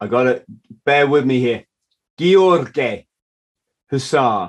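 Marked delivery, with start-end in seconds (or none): 2.2-4.5 best-effort put-on Romanian accent. Podcast host thanking a recent guest, saying his name in a Romanian accent. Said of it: "That's my best Romanian accent".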